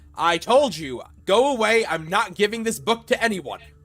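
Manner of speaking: high-pitched, loud, desperate shout.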